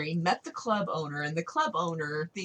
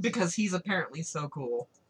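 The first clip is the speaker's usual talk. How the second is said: ordinary delivery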